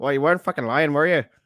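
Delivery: put-on Northern Irish accent. Retelling what another man's wife said on meeting him, Paddy impression. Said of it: "That was my Paddy impression".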